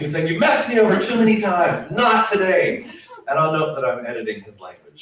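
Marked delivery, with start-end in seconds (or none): 0.3-2.9 put-on, raised, high-pitched confrontational shout. Retelling a man shouting at a coworker: imitating a man shouting. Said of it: "he kept shouting".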